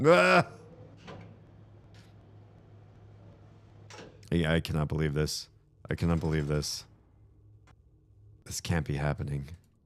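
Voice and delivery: whispered, breathy, shaking disbelief. Reacting to a game apparently restarting by accident: upset and shaking. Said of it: "I'm shaking right now".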